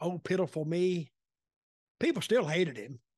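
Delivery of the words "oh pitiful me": put-on, pitiful, begging tone. Telling a story about a man people hated, acting out his mock pleading. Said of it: "he was pleading".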